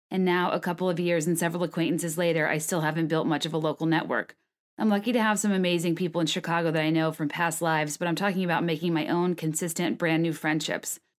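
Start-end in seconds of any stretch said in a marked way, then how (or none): none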